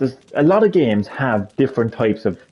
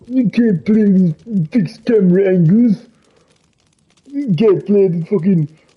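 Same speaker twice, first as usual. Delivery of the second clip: put-on Ukrainian accent; 6 semitones higher, 3 dB louder than usual. Ranting to Johnny about other players, in a put-on Ukrainian accent. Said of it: "I'm putting on a fucking Ukrainian accent".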